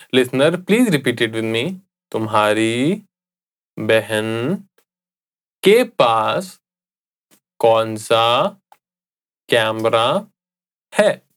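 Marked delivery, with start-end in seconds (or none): 2.1-11.1 slow, word by word with pauses. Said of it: "I'll say it again slowly".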